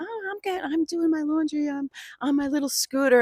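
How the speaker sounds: very high-pitched, mocking advert-style voice. Retelling mocking a tv ad lady while stuck on the couch: mocking the scooter store lady. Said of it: "making fun of the scooter store lady".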